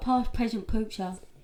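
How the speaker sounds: put-on childish little voice like a small child. Copying how the other speaker just said a line: imitating a childlike voice. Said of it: "That's how you said it".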